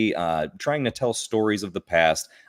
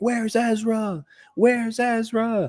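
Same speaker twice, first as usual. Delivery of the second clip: play-acted, high, drawn-out crowd cry, pitched way up; 13 semitones higher than usual. Retelling a convention crowd asking where Ezra is: imitating a crowd crying out. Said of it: "crying out".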